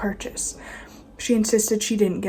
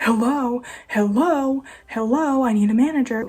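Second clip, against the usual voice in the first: imitated, put-on screaming voice; 3 semitones higher than usual. Retelling a drive-through customer demanding a manager: imitating a customer screaming. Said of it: "the whole time the woman was screaming".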